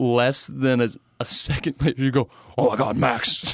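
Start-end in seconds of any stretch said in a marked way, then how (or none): 2.6-3.5 mock-disgusted put-on impression voice. Retelling his dad finding him hiding in the stall, imitating his disgusted dad. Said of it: "That's your impersonation of your dad?".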